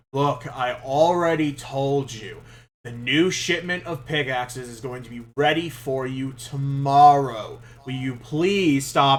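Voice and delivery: exasperated, sighing, fed-up, had-enough grumble. Voicing a blacksmith who sighs at interrupting customers: sighing, fed up. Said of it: "lets out a big sigh".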